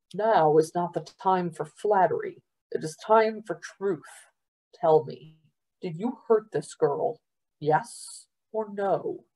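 plain

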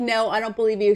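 ordinary delivery

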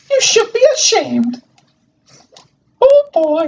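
squeaky cartoon mouse voice. Voicing game dialogue that has no voice acting, the speaker does a Mickey Mouse-like voice. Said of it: "this is very similar to Mickey Mouse voice".

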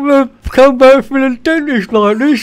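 talking through big teeth. A character just back from the dentist with big teeth: talking through big teeth. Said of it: "I can't talk properly".

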